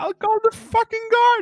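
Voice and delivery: screeching. Voicing the bookkeeper ordering two intruders out: screeching. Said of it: "and just screeches".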